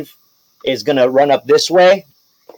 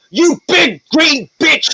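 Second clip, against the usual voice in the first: high, slow, furious, taunting knight voice. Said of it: "He's like".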